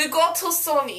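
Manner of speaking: put-on Russian accent. Speaker joking around after struggling with an epic voice, in a fake Russian accent. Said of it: "talking Russian accent".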